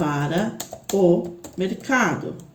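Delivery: slow, drawn-out, stressed o before mercado.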